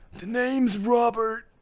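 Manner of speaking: put-on very high, raspy old man voice. Reading a story aloud, a man at a bar introduces himself, raspy old man voice. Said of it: "Do an old man raspy voice".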